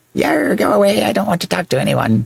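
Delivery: very high, raspy, rough pirate voice. Role-playing a pirate in a back-and-forth scene with another character, pirate voice. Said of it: "I can't do pirate voice and like female-ish at the same time".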